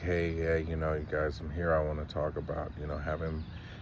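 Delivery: flat, lifeless, worn-out, soft monotone. Acting out how one could sit here with an attitude: flat, monotone and drained. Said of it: "be very monotone and drained and just be like".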